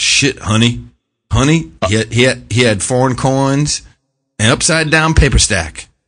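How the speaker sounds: put-on over-the-top Southern accent. Imitating people reacting to a news report: mocking Southern accent. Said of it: "for it to be Southern when I do that".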